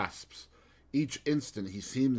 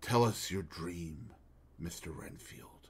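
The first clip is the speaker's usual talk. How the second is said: hushed and grave, whispered; 5 semitones lower, 7 dB quieter than usual. Narrator reads a doctor speaking to an injured man, quiet, grave tone. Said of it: "said in a quiet, grave tone".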